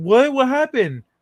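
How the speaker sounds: high-pitched, loud, mad, indignant, blurted delivery. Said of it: "He'd come back all mad".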